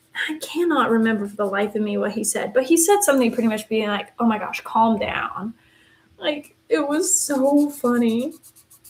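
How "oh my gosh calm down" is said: put-on annoyed, exasperated voice. Retelling his reaction to everyone freaking out: imitating an annoyed voice. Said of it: "He was so annoyed at us".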